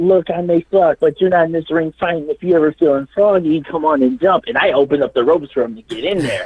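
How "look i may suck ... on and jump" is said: taunting, yelled. Retelling a match where a drunk fan heckled: retelling yelling at a heckler. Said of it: "I'm yelling at this guy on the mic".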